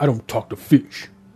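solemn, grave, dead-serious superhero voice. Describing another photo of him, the speaker does his line, imitating his serious voice. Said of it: "That's his voice".

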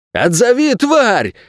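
very high-pitched, frantic, hysterical barked shout. One of the bandits, as a huge dog pins their leader, hysterical angry bark. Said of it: "истерично рявкнул".

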